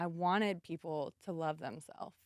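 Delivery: voice trembling and shaky, full of emotion. Explaining where their drive started: voice shaking with emotion. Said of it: "my voice is shaking".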